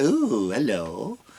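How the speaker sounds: put-on, exaggerated, over-the-top flamboyant delivery. Describing a comedian's act, doing an impression in an over-the-top flamboyant voice. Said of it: "That's my impression of an over the top flamboyant".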